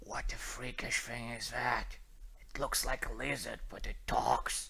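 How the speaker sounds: very quiet whispered aside. Voicing a guard who whispers to another guard: guard whispering. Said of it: "One of them whispers to the other".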